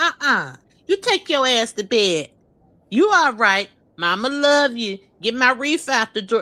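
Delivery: casual, normal speaking voice. Retelling the mother's reply at the table: imitating mother at the table. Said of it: "and she like".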